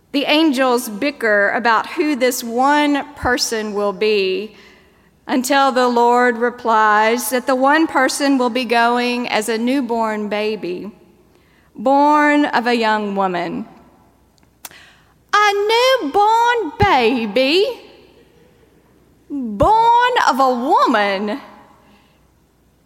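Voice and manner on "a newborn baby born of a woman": high, slow, loud horrified cry. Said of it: "they cry".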